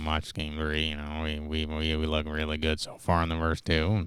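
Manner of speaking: low voice through an electronic voice box. Try out an impression for the others, sounding like a smoker who needs a voice box. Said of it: "Why does he sound like a smoker that needs a voice box?".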